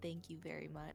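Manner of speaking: hushed, soft, pure half-whisper. Playing a character in a tabletop game, thanking a companion, half-whispering. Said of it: "I whisper to Brendan".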